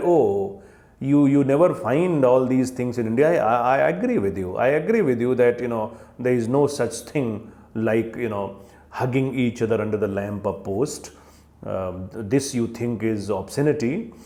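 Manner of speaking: normal talking voice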